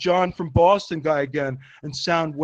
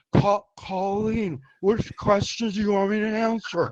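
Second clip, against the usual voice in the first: put-on tipsy, boozy, drunk-sounding voice; 3 semitones higher, 4 dB quieter than usual. Announcing an impression of drunk Chad, then doing it: drunk Chad voice. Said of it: "Here's drunk Chad".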